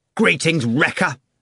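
hostile angry outburst. Greeted by the doctor, Ivan replies loudly and angrily. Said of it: "Ivan replied loudly and angrily".

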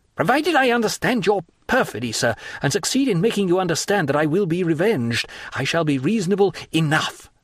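furious, seething. In a heated altercation, a guest confronts his host, furious. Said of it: "said Albert furiously".

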